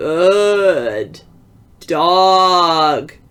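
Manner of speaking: rasping voice that cracks. A giant figure touches the narrator on the head, in a harsh, cracked voice. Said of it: "he said in a harsh, cracked voice".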